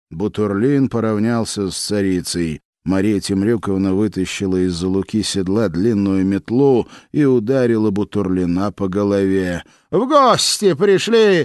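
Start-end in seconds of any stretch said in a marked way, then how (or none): 9.9-11.4 very high, jeering, mocking shout. Narrator reading the tsaritsa's line to the voivodes, a mocking shout. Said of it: "глумливо крикнула царица".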